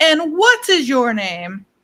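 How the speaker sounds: loud, booming, swooping showman announcer voice. Retelling how he comes over to you and asks your name, loud booming voice. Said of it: "in like a loud booming voice".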